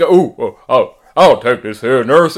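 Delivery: obviously fake, put-on deep voice. Mocking women who put on fake deep voices, obviously fake deep voice. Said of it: "women putting on like deep voices, like really obviously fake".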